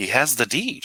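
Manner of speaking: dry, half-sarcastic tone.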